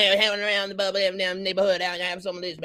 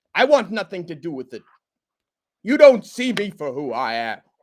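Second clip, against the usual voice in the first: growling monster voice. Asked to do the Beast breaking up with Belle, in a Beast voice. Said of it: "Do an impression of the Beast breaking up".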